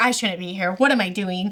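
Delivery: imitated panicked speech. Retelling a character's reaction to a boat coming in: imitating panicked speech. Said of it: "she's, like, panicked".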